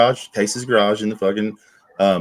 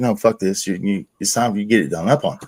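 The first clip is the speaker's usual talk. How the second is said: mock-angry, acted angry outburst; 2 semitones lower than usual. Telling a story about her repeated excuses, retelling an angry outburst. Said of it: "So I was so pissed off".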